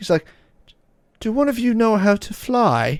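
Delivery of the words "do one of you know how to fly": put-on British accent, pitched up. Retelling what a character asked the group, British accent. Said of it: "speaking in a like a British accent".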